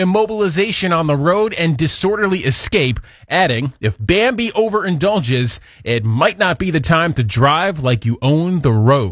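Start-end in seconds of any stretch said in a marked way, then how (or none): none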